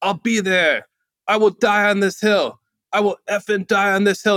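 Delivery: high, bawling, sobbing cry through tears. Retelling how the man on stage reacted, imitating screaming through tears. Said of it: "through the tears he's screaming".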